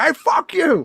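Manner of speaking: loud, very high-pitched, scornful, hostile yell. Retelling the waitress's words to the taco place: imitating the waitress. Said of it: "she'd go out there and be like".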